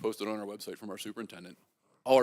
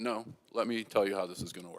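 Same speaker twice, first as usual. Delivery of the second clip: put-on fatherly, parent-style dad voice; 5 dB quieter than usual. Retelling what a caller said on the phone: Stanley's dad voice. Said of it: "in Stanley's dad voice".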